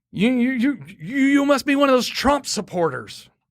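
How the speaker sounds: very high-pitched, flustered stuttering. Retelling what a flustered woman said to the speaker, imitating her flustered stutter. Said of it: "she's stuttering. She's so flustered".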